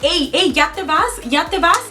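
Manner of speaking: plain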